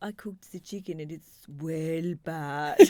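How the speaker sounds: strong put-on Hungarian accent, chatty. Quoting how her mum picked up the kids' slang, imitating strong Hungarian accent. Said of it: "her accent's still the most strong Hungarian accent".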